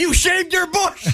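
overjoyed. In a game applying any emotion to a phrase, a player delivers it: ecstatic.

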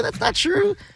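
mock giggling girl voice. Imitating a girl caught doing something: imitating a giggling girl. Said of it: "she's giggling, like".

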